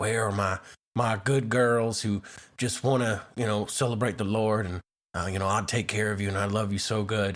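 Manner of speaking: put-on whisper. Retelling a man's posted videos, imitating Hunter whispering. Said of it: "he's whispering and he's like".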